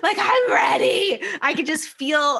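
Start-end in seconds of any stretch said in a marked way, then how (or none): 0.2-1.2 imitated screaming, higher and louder. Retelling the moment after finishing a recorded set: imitating own screaming.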